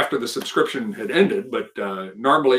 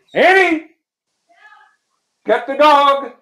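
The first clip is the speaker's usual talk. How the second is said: very high, loud, drawn-out yell; 7 dB louder than usual. Pausing a room tour to call to annie: yelling. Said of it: "I'm gonna yell".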